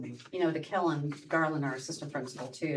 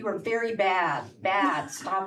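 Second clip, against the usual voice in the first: stern, scolding mean-mom voice, slow and raised; 5 semitones higher, 7 dB louder than usual. Speaker recounts talking to the contractors, recreating mean mom voice. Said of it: "pull out my mean mom voice".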